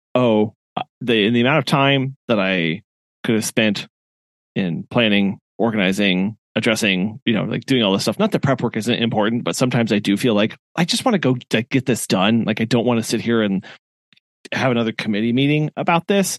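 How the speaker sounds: ordinary delivery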